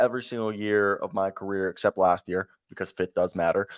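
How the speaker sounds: plain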